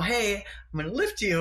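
plain, simple broken-English delivery. Retelling telling a partner about a lift: imitating own broken english. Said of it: "in my broken English".

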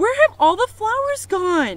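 very high, shrill, very loud yell. Reading a story, a woman shouts to her sister about the missing flowers. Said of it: "shouted Eugenia".

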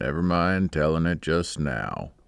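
gruff, rough-spoken voice with real gentleness. A backwoodsman speaks to a man at a terrible disadvantage: gruff but gentle. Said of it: "he said in a gruff voice, but with real gentleness".

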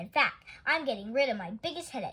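ordinary delivery, nothing marked

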